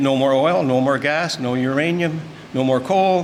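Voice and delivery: ordinary talk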